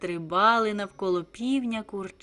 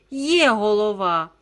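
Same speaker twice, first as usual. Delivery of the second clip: exclaimed, much louder; 7 dB louder than usual. Reading the chick's reply to the scolding rooster, exclaimed. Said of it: "вигукнуло курча".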